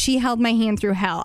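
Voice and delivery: ordinary delivery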